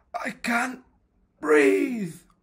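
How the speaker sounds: very high, gasped-out, breathless cry. Narrator reads Head, landed on by Body, gasping. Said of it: "gasped Head".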